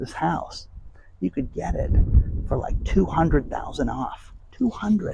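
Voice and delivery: soft, breathy, hushed whisper. Recounting what two agents said about a house: whispering. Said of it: "I'm whispering, so don't freak out about the sound".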